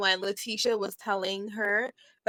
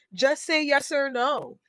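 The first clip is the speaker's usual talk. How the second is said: put-on blustering, puffed-up voice, loud, high and slow; 5 semitones higher than usual. Retelling what Curtis said during a discussion, imitating Curtis's bigged-up voice. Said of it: "he was bigging up his voice when he's saying it".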